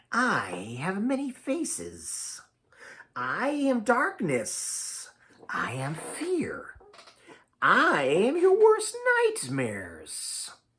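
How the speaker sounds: very slow, hollow, swooping, very drawn-out hiss. Narrator reading a hooded fog creature's words, in a hollow hissing voice.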